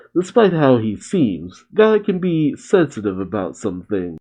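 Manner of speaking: ordinary talk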